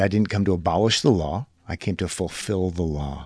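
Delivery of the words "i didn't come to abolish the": plain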